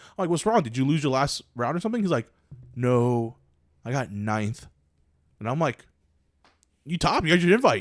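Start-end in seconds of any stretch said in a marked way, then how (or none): 2.8-4.7 mock very slow, sad and mopey delivery. Recalling a tournament where a fellow player was upset, imitating Brian's mopey reply. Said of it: "Brian's like super sad, he's super mopey".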